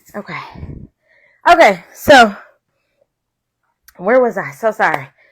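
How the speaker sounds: out of breath. Speaker resuming their talk after rushing, out of breath. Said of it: "Let me catch my breath for a second".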